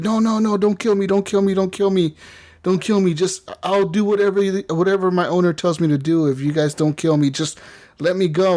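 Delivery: frantic, panicked, pleading freak-out. Retelling a game demo where an android is threatened with disassembly: imitating Kara freaking out. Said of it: "she starts freaking out".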